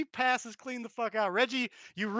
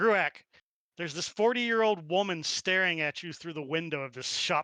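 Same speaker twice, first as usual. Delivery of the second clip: plain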